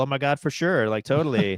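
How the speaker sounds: put-on high, eighties-style valley girl voice. Explaining an eighties movie reference, showing how girls talked, in a valley girl voice. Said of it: "girls would talk like a Valley Girl".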